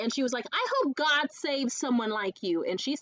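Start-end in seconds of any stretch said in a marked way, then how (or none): 0.5-2.6 put-on Valley girl accent, swooping and condescending. Retelling what a bully at summer camp said: imitating a condescending valley girl voice.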